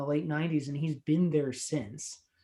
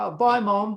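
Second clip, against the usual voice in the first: high, loud put-on Australian accent, fully in character; 5 semitones higher, 6 dB louder than usual. Imitating the kid in the movie saying bye to his mom: Australian accent as Cody. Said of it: "Cody starts out having an Australian accent".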